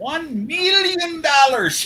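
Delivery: very high-pitched, loud character voice. Reading out a commenter's reply: Doctor Evil voice. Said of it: "In his best Doctor Evil voice".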